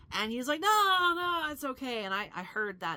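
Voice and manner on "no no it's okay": put-on very slow, drawn-out, high drunken voice. Retelling a man who walked toward them in their room, imitating a drunk voice. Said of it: "That's the drunk voice".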